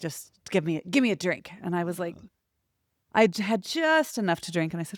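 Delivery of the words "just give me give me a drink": rude, demanding voice, barked out. Speaker mimics kids demanding drinks from a bartender; mimicking a barked demand. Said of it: "they're like barking at the bartender".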